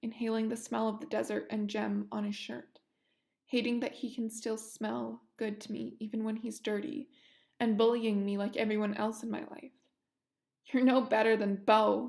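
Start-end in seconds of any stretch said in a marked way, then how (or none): 10.7-12.1 through gritted, clenched teeth, much louder. Narrator speaking to the man in the scene: through gritted teeth. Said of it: "through gritted teeth".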